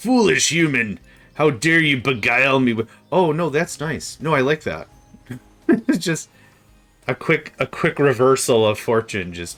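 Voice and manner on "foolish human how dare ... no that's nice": scornful, disdainful, haughty, condescending cat voice. Putting something in front of Nico and imagining his reaction, mock-disdainful Nico voice. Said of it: "I could imagine his voice".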